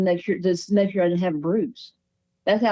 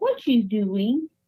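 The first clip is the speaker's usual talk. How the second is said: put-on very sweet, small little girl's voice; 3 semitones higher than usual. Retelling a voice heard in the right ear while lying with eyes closed, in a sweet little girl's voice. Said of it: "the sweetest little voice you ever heard".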